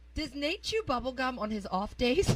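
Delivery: ordinary delivery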